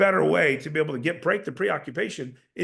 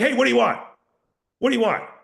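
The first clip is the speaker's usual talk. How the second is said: blunt, overbearing, falling tone on each phrase; 6 semitones higher, 5 dB louder than usual. Acting out a bull personality type: imitating overbearing downward tonality. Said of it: "He's speaking with absolute downward tonal-, tonality, ... a little bit overbearing".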